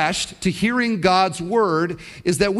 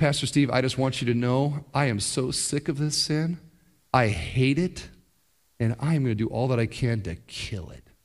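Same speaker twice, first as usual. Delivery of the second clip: put-on cold, killer's tone; 7 semitones lower, 6 dB quieter than usual. A pastor retells what a man told him, imitating a killer's tone. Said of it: "he said it that way, like a killer would say".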